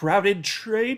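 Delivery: questioning upturn, rising tune on trade. Reading an article title aloud, rising question intonation on trade. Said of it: "which is why the inflection of my voice does this questioning".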